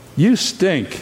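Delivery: put-on small child's little kid voice. Retelling what he said to them, the speaker quotes him in a little kid's voice. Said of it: "in his little kid's voice".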